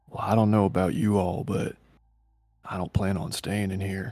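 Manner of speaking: quiet, offhand aside. Speaking as a character to the whole group after the accident, very quietly. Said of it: "says very quietly to all of them".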